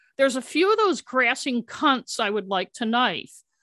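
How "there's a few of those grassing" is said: usual speaking voice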